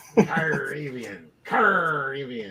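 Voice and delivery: "Caribbean" said in a pirate voice. Joking about a word's spelling on a show, a host repeats it: saying it like a pirate. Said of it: "You gotta say it like a pirate".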